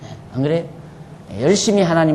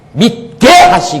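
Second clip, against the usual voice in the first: stress landing on the syllable 게 in 믿게; 8 semitones higher, 6 dB louder than usual. Teaching exact pronunciation of 믿게 하시고, stress on 게 in 믿게. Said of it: "여기서 가장 악센트가 어디냐면 개자에 들어있어요".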